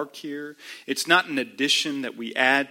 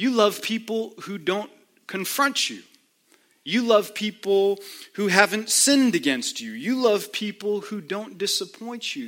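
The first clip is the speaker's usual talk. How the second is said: put-on sarcastic voice, higher; 6 semitones higher than usual. Imagining Jesus asking a rhetorical question: sarcastic Jesus voice. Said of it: "catching the sarcasm in Jesus' voice".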